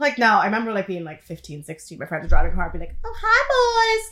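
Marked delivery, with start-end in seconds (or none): 3.0-4.1 very high flirty voice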